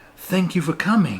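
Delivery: said through a smile. A woman emerging from a barn greets the players as they leave the coach, said with a smile. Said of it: "she says with a smile".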